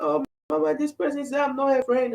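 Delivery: high, tearful, put-on little-girl crying voice. A mother retelling her daughter coming to her crying, imitating a crying child. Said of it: "and crying, like".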